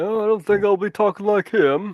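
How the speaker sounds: put-on cartoon dad voice that misses. Discussing King of the Hill with others, doing a bad Hank impression. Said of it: "Bad impression, I know".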